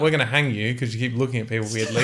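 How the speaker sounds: usual speaking voice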